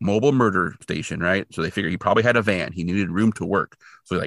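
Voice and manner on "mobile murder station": usual speaking voice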